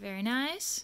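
plain

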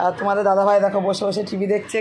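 plain

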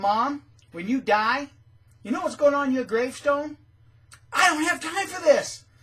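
sarcastic, high, loud taunting jab. Retelling how they and their brother teased their mom to her face, mocking her. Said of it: "mocked her in front of her".

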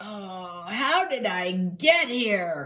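very slow, drawn-out groan. A dog, unable to stand, fallen back onto the bed, groaning. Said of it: "Ned groaned".

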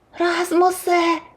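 shrill, very high, sudden shout. Reading a story, the narrator voices Timi calling to Rasmus in the forest: shouted. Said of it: "крикнув Тімі".

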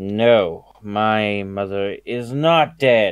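put-on tipsy, loud, drunken voice with drawn-out 'no'. Voicing a character in a tabletop game, replying to a companion kind of drunkenly. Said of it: "kind of drunkenly goes".

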